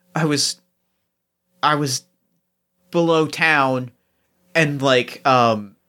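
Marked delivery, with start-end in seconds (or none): 0.2-3.9 hushed, whispered speech. Voicing a character who gets close and whispers: whispering. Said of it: "you just hear him kind of whisper".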